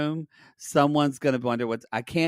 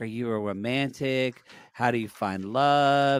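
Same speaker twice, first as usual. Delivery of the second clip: normal talking voice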